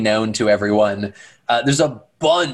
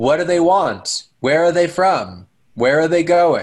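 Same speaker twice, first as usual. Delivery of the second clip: mock-deadpan, dry, matter-of-fact, dead straight delivery; 4 semitones higher than usual. Acting out a character who keeps asking questions, mock-deadpan questions. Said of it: "They just ask deadpan these questions".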